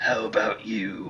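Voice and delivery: slow, whispered, edgy, raspy voice. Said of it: "edgy, raspy voice".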